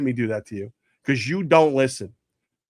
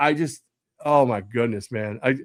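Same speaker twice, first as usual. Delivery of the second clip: ordinary talk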